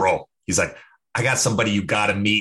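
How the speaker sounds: poorly imitated Boston accent. Retelling what a buddy from boston said: terrible boston accent. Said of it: "I'm gonna do a terrible Boston accent".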